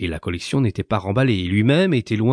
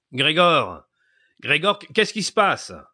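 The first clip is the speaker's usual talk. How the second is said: high-pitched calling-out cry; 6 semitones higher than usual. Gregor's father knocks at the side door and calls out to him. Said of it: "en s'écriant".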